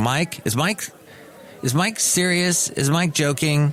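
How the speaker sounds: ordinary talk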